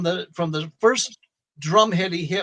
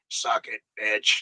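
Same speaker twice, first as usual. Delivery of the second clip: put-on devil-like voice, much lower pitch; 8 semitones lower, 4 dB quieter than usual. Retelling how a funny man kept saying something to make you laugh, imitating him talking like a devil. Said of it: "the way he was saying it was like a devil".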